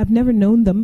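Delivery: hurried sputtering. Pressed by him to answer, the narrator replies, sputtering quickly. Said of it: "I sputtered quickly".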